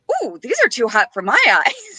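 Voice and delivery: put-on animated British accent with swooping pitch. Retelling a man's reaction to pictures shown to him, British accent. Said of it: "he goes in his British accent".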